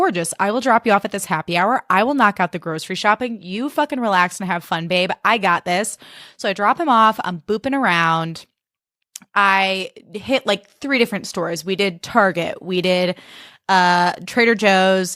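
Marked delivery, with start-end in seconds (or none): none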